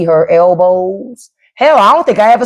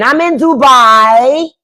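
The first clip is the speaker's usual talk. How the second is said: put-on accent, pitched up, "Dubai" stretched long; 5 semitones higher than usual. Recalling a wonderful lady's way of saying Dubai, imitating a lady's accent. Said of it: "It just makes me say it that way because of her accent".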